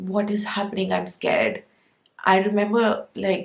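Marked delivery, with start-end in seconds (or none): 0.0-1.6 mock, tearful, crying, frightened begging voice. Retelling begging a doctor before surgery: imitating own crying plea.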